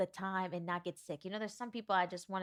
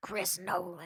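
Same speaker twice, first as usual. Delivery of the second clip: put-on old woman voice. Repeating a director's name after saying how it sounds: old lady at the casino voice. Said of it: "I sound like an old lady at the casino".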